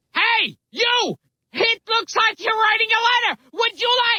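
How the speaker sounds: shouting. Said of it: "Gilbert yelling".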